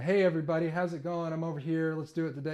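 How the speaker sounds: very faint, quiet voice, turned away from microphone. Showing how a stream greeting sounds with the head turned away: turned away from the microphone. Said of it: "If you sound like that".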